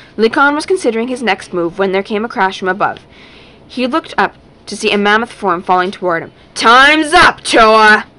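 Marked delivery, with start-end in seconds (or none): 6.6-8.0 huge, loud, roaring, booming bellow. A huge form falling toward Likon from above calls down, bellowing. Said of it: "bellowed the plummeting".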